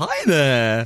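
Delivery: goofy, silly, wacky put-on voice. Suggesting how a letter written in Comic Sans would sound: wacky voice. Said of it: "Wacky voice".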